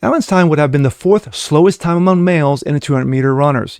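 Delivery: plain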